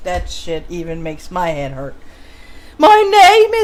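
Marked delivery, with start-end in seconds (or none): 2.8-3.7 very high, loud fake British accent. Reading a text aloud in a put-on British accent. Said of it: "here comes my British voice".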